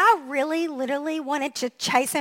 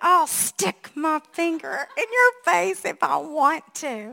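put-on delivery forced through clenched teeth; 3 semitones higher than usual. Retelling a man who leaned in with his finger in the speaker's face, through gritted teeth. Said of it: "through gritted teeth, he said".

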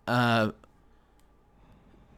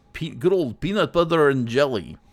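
put-on Swedish-tinged accent. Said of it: "I didn't get his accent that much".

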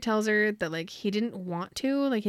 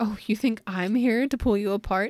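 plain

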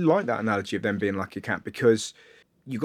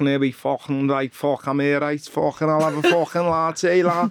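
mock Liverpool accent, higher pitched; 3 semitones higher than usual. Joking about hiding an accent, ordering coffee: put-on scouse accent. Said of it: "so you could do a Scouse".

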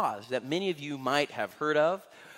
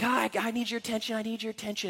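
loud, pitched-up shout, calling out; 7 semitones higher, 4 dB quieter than usual. Retelling a blind beggar calling out to Jesus: imitating a shout. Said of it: "he shouts out to Jesus".

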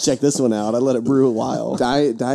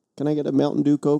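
put-on northern Canadian accent; 3 semitones higher than usual. Joking about how people down south order a coke, in a northern canadian accent. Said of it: "he used a northern Canadian accent to ask for his Coke".

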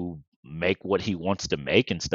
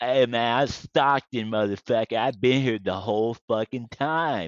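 put-on slurred fighter talk, higher; 4 semitones higher than usual. Retelling how a fighter talks, mocked for slurring: Nate Diaz impression. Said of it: "people clown on Nate Diaz for talking like he has C T E".

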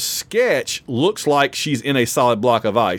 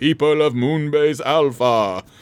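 put-on grand, orator-style delivery in a British accent; 2 semitones higher than usual. Recalling every episode of the show's first season, the speaker mimics the Space: 1999 British voice. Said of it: "British voice going".

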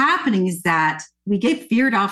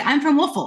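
put-on very fast rushed speech, higher pitch; 6 semitones higher than usual. Retelling answering where they're from: imitating saying it very fast. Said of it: "we would say it so fast".

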